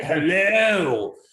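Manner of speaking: silly put-on demon voice, stretched out, high, loud. Retelling a stand-up bit, a demon rising from the earth: weird demon vagina voice. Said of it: "this weird act out of a demon vagina".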